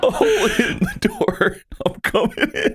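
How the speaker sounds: squeaky, very high-pitched character voice. Repeating the other player's line after comparing it to Morty: imitating a Morty voice. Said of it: "It's like Morty, just like".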